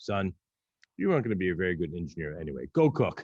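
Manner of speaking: play-acted, bone-dry, matter-of-fact deadpan, zero reaction. Retelling his father's reply to him: retelling a deadpan remark.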